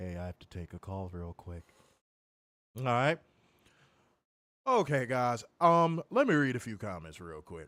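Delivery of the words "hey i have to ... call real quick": low, very quiet, hushed, put-on serious tone. Retelling what he said when he thought he was serious, mock-serious voice. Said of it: "Y'all heard his serious voice?".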